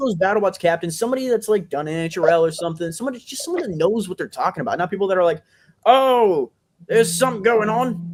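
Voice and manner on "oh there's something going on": very slow, drawn-out, loud clueless announcer voice. Mocking commentators who don't know the sport: imitating a clueless commentator. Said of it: "That's an accurate impression there".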